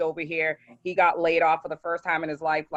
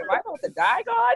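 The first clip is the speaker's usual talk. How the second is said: mock alarmed, very high, rising disbelief. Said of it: "I'm like".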